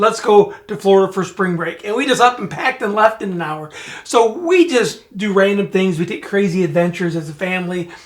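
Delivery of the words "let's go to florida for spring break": plain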